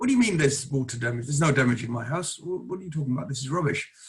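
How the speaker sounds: indignant, angry, vigorous, forceful and certain. Retelling the husband's phone call about the report: imitating an angry caller. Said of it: "rang me up quite angrily and said".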